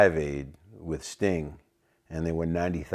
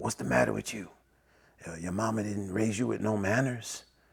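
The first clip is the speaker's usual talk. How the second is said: raspy scolding tone, a little higher pitched; 5 semitones higher, 5 dB quieter than usual. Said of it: "he spoke with a rasp".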